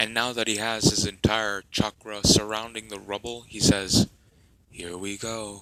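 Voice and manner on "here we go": very quiet, soft, emotionless, soulless hush. A role-player voices his character Nergantu, soulless Nergantu voice. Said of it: "In a soulless like voice".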